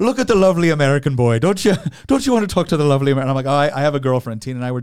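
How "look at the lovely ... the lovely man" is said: horrible, bad put-on Irish accent. Retelling what a woman in Ireland told the waitress about him: horrible Irish accent. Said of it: "forgive my horrible accent here".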